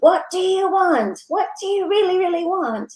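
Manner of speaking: put-on high, shrill stage yell. Retelling a speaker's question to a large audience: imitating someone yelling. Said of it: "yelling at us all from the stage".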